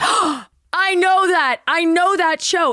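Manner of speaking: mock relieved, delighted tone, very high pitch. Retelling meeting a distraught hiker, the speaker acts out her happy, relieved reply. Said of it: "she's so happy that she hasn't lost her mind".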